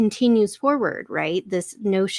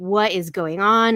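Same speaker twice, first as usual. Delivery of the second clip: mock pissed-off angry outburst. Retelling a character's reaction on arrival: imitating a pissed-off character. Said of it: "she's just pissed off".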